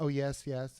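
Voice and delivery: ordinary talk, nothing marked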